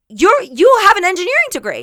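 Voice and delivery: high, exasperated yelling, acted out. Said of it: "yelling at him".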